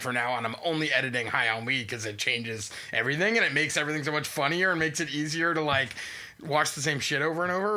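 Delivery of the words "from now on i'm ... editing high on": usual speaking voice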